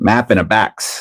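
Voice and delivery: slow, deliberate, drawn-out Wisconsin accent. Joking about regional accents: Wisconsin accent. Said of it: "I like that Wisconsin accent".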